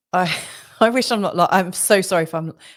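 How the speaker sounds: words stumbling, broken by nervous laughter. Apologizing after saying it is not tragic: nervous laughing while talking. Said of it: "Obviously, I'm laughing".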